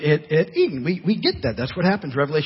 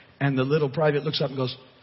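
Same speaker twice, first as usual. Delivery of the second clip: ordinary talk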